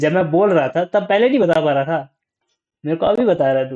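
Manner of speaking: loud, high-pitched scolding.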